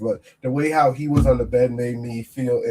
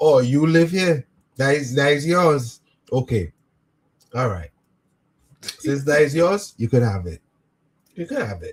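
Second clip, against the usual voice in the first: put-on, dry, sarcastic voice with West Indian accent. Acting out how a West Indian person reacts to an intruder: sarcastic. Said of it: "how they be sarcastic".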